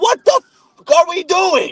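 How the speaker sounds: put-on shrill, very high screaming outburst. Retelling watching the team throw three times in a row, reenacting screaming at the tv. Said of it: "I'm screaming at my T V like".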